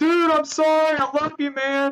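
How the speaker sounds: very high shrieking at the top of the lungs. Recalling a game, the speaker imitates the enemy player who shot them, screaming. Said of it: "He is literally screaming on top of his lungs".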